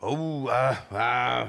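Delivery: grunting sounds.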